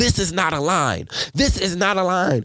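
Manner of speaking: high-pitched, scolding yell. Telling about an older lady yelling at people standing in a line, retelling her yelling. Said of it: "she was yelling at them like".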